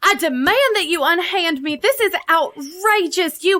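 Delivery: acted, outraged, indignant, high yelling. Playing a character who yells while being escorted away from the floor: indignant yelling in character. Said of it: "you start yelling".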